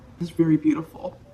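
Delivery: emotional voice catching, choked up. Giving a card reading for Sagittarius, choked up and emotional. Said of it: "I'm getting choked up".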